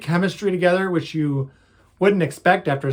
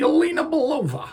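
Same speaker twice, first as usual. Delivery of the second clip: terrible fake Russian accent; 10 semitones higher than usual. Naming a new movie character: terrible russian accent. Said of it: "That's a terrible Russian accent I just did".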